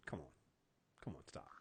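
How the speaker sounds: mock expressionless, flat, barely above a whisper. Retelling a TV scene where the character suddenly stops, imitating Fitz's flat expressionless line. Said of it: "it was no expression".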